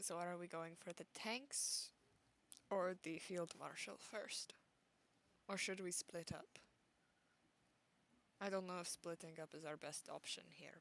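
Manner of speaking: low, hushed voice. A player speaking in character to the party during a game, lowered voice. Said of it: "I'm gonna lower my voice and say".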